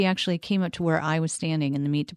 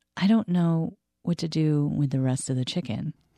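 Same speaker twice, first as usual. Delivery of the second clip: whispered delivery. Retelling what a shopper said about the chicken: imitating a whisper. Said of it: "kinda whispered".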